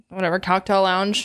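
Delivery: normal talking voice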